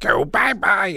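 high-pitched cartoon puppet character voice. Showing off voices, doing Animal from Muppet Babies voice. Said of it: "this is Animal from Muppet Babies".

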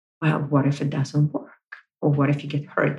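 whispered put-on voice. Speaker voicing the ego's doubting questions, whispering inner voice. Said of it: "You can hear that whispering voice there".

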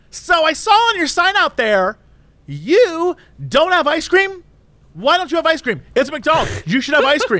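acted-out, high, loud shouting. Retelling a drive-through customer shouting at the worker: imitating a woman shouting. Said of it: "begins to shout loudly at the guy".

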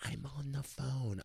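hushed, half-whispered, very quiet. Retelling answering a woman who asked for a photo: imitating a half-whisper. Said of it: "I whisper".

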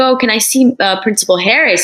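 ordinary talk, nothing marked

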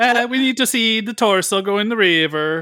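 put-on slow, high, drawn-out Italian accent. Imitating a producer calling for a torso in the river: Italian-accent Dino De Laurentiis impression. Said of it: "that's my Italian accent".

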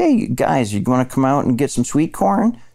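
nasal, high Midwestern Illinois twang. Speaker recalling acting school, imitating their family's nasal Illinois accent. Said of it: "my family sounds more nasal".

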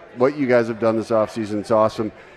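ordinary talk

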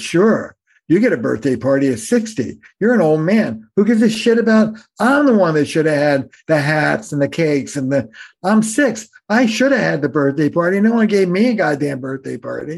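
mock pissed-off six-year-old griping voice. Retelling a story of a man's six-year-old self at his sixtieth birthday, imitating an angry child. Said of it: "And he's pissed".

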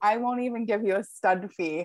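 usual speaking voice

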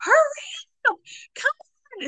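acted impatient child scream, very high and slow. Retelling waiting at the top of the stairs: imitating kids screaming. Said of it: "screaming at him".

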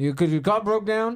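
put-on Creole accent. Retelling what a man said when he rolled up to their broken-down car, thick Creole accent. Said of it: "a thick like creole kind of yeah, accent".

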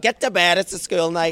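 put-on full-strength Northern Irish accent. Retelling being sent to bed by their mum, the speaker uses a strong Northern Irish accent. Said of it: "in her most Northern Irish accent".

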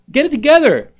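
mock yelling, high and loud.

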